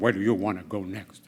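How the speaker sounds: very low, stiff, by-the-book military officer voice. Retelling how an officer called him in about his orders, in a military voice. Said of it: "with this military voice".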